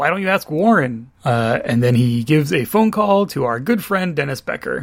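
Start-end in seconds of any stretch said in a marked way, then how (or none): 0.0-1.1 put-on snarky tone. Retelling how Jim answers Beth's question, imitating Jim being snarky. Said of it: "Jim is very snarky about".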